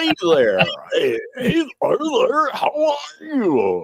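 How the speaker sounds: forced, over-the-top, very high, strained radio DJ voice. Demonstrating a style podcasters now avoid, a speaker does a forced, retching-sounding greeting. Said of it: "it sounds like you're really trying to vomit".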